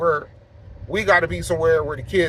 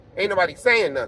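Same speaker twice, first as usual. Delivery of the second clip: normal talking voice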